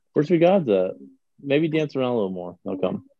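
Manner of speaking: usual speaking voice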